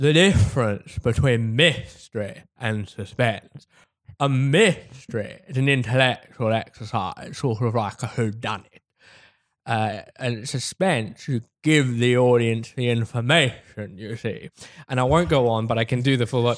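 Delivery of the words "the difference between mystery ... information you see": unhurried, slow, deliberate, drawn-out character voice. Imitating Alfred Hitchcock explaining mystery versus suspense: Alfred Hitchcock impression. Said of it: "how you gotta do the Hitchcock".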